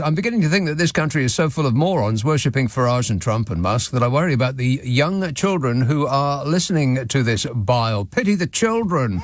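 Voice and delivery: ordinary talk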